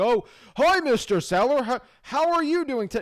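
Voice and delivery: wooden, scripted delivery. Showing how not to sound on a cold call: robotic voice reading a script. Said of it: "talk like a robot, like you're reading a piece of paper".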